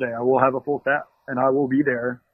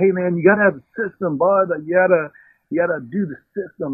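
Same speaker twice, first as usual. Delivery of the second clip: put-on rural country accent, higher and slower; 4 semitones higher than usual. Recalling a cook from his dishwasher days, in a country accent. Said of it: "This cook was country accent".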